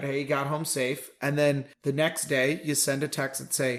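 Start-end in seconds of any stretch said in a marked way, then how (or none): none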